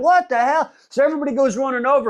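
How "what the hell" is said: mild, held-in half-scream at talking level. Retelling a story where a scream is heard: imitating someone screaming. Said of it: "We hear some motherfucking screaming".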